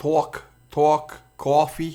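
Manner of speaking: heavy, full-force Brooklyn accent. Pointing out that his Brooklyn accent is back after visiting his mother: Brooklyn accent. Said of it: "My Brooklyn accent".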